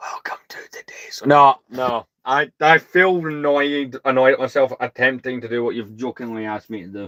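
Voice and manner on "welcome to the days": joking mock ASMR voice, much quieter. Jokingly asked by someone to try ASMR, joking ASMR voice. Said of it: "You want me to jokingly try A S M R?".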